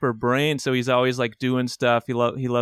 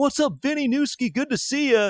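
very high, bursting-with-energy, pumped-up delivery; 13 semitones higher than usual. Imitating an always pumped father greeting someone: imitating pumped-up dad. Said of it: "he's always pumped".

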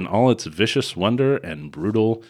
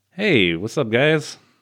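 casual, drawn-out delivery in a woman's voice. Acting out the assassins guild president as a woman: voicing the guild president as a woman. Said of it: "Let's just say it is a woman".

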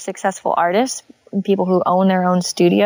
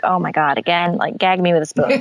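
mock, put-on exasperated tone. Retelling the reaction to a tired question: imitating an exasperated reaction. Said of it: "you hear that question and you're just like".

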